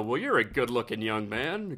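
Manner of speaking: put-on older man voice. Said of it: "almost like an older fella go".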